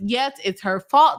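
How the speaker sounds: ordinary delivery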